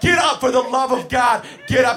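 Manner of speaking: loud, high, exasperated yell at wit's end.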